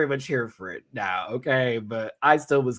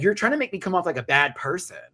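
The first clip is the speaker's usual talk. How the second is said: mad, offended, indignant tone with raised pitch; 5 semitones higher than usual. Quoting a woman's reply to a sarcastic guy, retelling a woman's mad reply. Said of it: "she was so mad".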